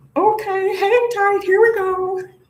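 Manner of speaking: very high, slow, drawn-out cartoon squeak. Pulling tarot cards and quoting a cartoon character: Gingerbread Man from Shrek voice. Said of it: "I'm hearing the gingerbread man from Shrek, where he's like".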